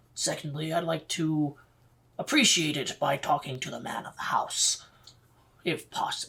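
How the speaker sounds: whispering in a character voice. Ordering an ale from the barkeep in a game scene: whispering in character. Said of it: "I whisper to him".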